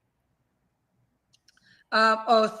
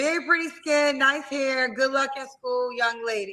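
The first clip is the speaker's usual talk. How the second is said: ordinary delivery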